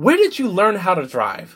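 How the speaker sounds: put-on scream, flung out high and swinging. Retelling how a passing driver reacted to the speaker, imitating someone screaming. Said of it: "just screams something like".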